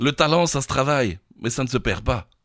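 French with a put-on Belgian accent. Encouraged to try it, speaking in a Belgian accent. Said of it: "Est-ce que je tente l'accent belge".

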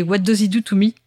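English spoken in a strong French accent.

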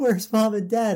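high, play-acted, tearful, sobbing crying voice. Retelling a cartoon prank scene, imitating Robin crying. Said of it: "he's, like, crying".

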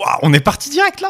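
shrill, very high, delighted, excited shouting. Greeting the other host as the podcast starts: excited shouting. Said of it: "tu hurles".

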